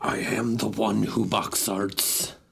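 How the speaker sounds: slow, rough, creaky rasp.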